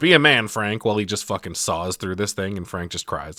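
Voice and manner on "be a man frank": mock shouted, loud and commanding. Retelling a movie scene, imitating Bert yelling. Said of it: "Bert yells".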